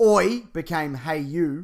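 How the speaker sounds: ordinary talk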